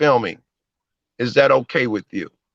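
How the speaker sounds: aggressive, combative, confrontational, challenging tone. Retelling own reply when asked about filming: retelling own aggressive reply. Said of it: "that's an aggressive tone".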